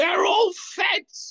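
put-on, very high, shrill screaming. Imagining their father screaming to a camera, imitating Rand screaming. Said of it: "screaming to a camera".

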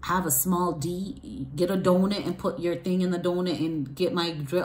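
normal talking voice

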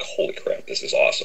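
whispered exclamation full of awe. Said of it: "and it was like".

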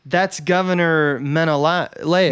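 ordinary delivery

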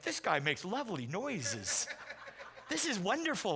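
slow, purring, amused and charmed deer voice.

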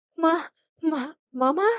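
stammering. A woman answers a man's silent question, stammering. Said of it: "தடுமாறினாள்".

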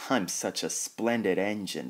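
ordinary delivery

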